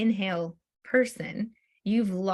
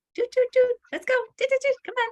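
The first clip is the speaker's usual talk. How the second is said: squeaky, very high-pitched throughout; 4 dB louder than usual. Retelling what a woman wants a rider to do, really high pitched. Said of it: "do everything really high pitched".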